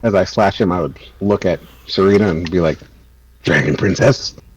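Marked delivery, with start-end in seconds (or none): 3.4-4.3 low, raging, growly voice. Slashing a foe, then looking at Serena, in a growly voice. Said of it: "in a growly voice because I'm raging".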